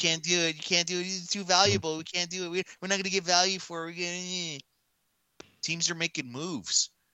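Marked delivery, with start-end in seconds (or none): 0.0-4.6 high-pitched, whiny, mocking voice. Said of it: "All we hear is".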